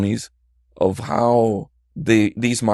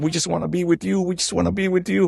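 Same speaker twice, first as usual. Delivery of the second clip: put-on crying, high, rushed, tearful pleading; 9 semitones higher than usual. Retelling the words of an abandoned woman who was crying, imitating a crying plea. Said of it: "and she's crying".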